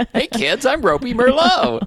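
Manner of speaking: very high, shrill, loud clown voice. Introducing the old clown stage name, Ropey Merlot clown voice. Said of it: "adding clown voice".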